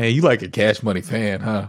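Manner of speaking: mock disdainful taunting tone. Retelling how a high school friend teased another: imitating a disdainful taunt. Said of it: "by the way he said it, there was such, like, disdain".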